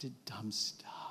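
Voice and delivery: soft, breathless, confessional whisper.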